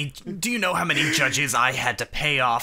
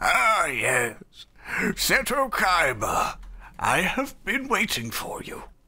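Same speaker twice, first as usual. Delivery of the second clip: put-on very slow, drawn-out elderly old man voice; 4 semitones higher than usual. Retelling a scene where an old man greets seto kaiba: imitating an old man. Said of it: "there's just this old man standing outside the museum like".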